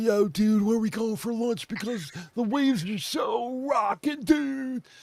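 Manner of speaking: high-pitched put-on California surfer-dude accent. Speaker demonstrating regional american accents to others: california surfer accent. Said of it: "that's the California accents".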